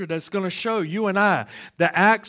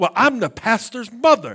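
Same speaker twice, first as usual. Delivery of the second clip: play-acted, very indignant, huffy, affronted tone; 4 semitones higher, 4 dB louder than usual. Telling a story, quoting a woman's reply to an usher, with mock indignance. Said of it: "with a very indignant voice".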